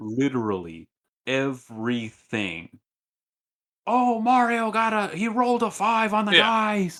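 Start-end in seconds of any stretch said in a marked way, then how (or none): 3.9-7.0 mock super ecstatic announcer, very high and loud. Retelling how the event announcers called every move: imitating a super ecstatic announcer. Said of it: "super ecstatic".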